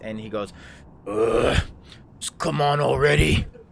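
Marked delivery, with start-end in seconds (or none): 1.1-3.4 very loud, irritated, annoyed grunting monster voice. Game master voicing a bugbear turning to a player, annoyed grunting bugbear voice. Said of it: "he kind of grunts and he rolls his eyes".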